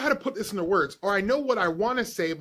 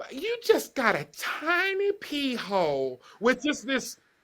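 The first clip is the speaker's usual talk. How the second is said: put-on heavy country accent laid on thick, pitched up; 5 semitones higher than usual. Retelling what a country woman said to you, in a thick country accent. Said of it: "with such this thick accent".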